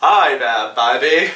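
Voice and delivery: deliberately bad put-on English accent. Talking about the vampire character Spike and quoting him, in Spike's terrible English accent. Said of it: "he's like".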